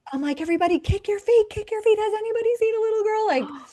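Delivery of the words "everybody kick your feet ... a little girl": frantic, shrill, very high, loud panicked screaming. Retelling searching a jacuzzi for a missing little girl, re-enacting her own screaming. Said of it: ""You were screaming,"".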